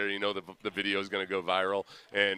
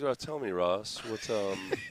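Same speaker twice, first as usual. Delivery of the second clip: put-on sedated, calm therapist voice. Asking a co-host a question on air: put-on sedated therapist voice. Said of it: "his voice now sounds like a, a therapist".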